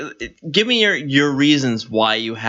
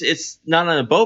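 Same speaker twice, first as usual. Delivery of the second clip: plain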